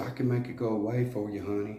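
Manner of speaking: put-on sweet, soft Texas accent. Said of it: "With that Texas accent, real sweet and soft".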